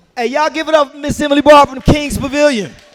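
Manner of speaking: high, loud, hyped-up host voice shouting.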